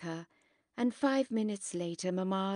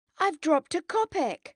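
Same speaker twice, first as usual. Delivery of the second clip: sudden agitated voice, raised and pitched up; 9 semitones higher, 7 dB louder than usual. Narrator reading a character's sudden announcement during a card game, agitated voice. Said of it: "Grisha announces suddenly in an agitated voice".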